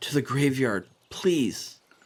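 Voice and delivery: frightened, panicked, urgent tone. As the town is attacked, the storyteller gives a frightened character's line: panicked plea.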